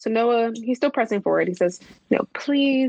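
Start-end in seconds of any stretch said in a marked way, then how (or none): 2.1-2.9 acted-out begging, much higher. Recapping an episode, the speaker acts out a character's plea: retelling begging. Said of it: "He starts begging".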